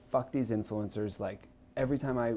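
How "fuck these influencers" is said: plain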